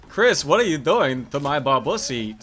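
ordinary delivery

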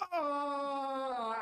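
high, startled dying cry, skeleton-like.

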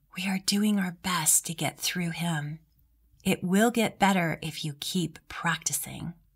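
whispery, raspy voice. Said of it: "in the softest voice, like a whisper".

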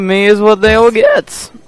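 voice cracking. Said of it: "voice crack".

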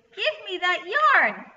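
very high, very loud, angry goblin-like shriek. Narrating a story, a goblin trips over yarn and demands it: angry screech. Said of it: "he screeched angrily".

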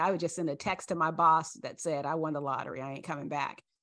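ordinary delivery

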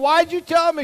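shrill, very loud, furious angry yell. Retelling yelling at an older sister over a lost quarter: imitating yelling at sister. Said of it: "I start to yell at my sister".

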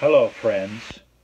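on-air TV presenter voice. Opening a video with a greeting to viewers, in a TV voice. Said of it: "That's my TV voice".

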